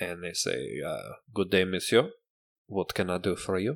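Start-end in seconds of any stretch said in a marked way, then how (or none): 1.3-3.8 bad, over-the-top, fake French accent. Voicing an elf behind a store counter greeting a customer: horrible french accent. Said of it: "With this horrible French accent?".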